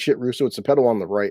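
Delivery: plain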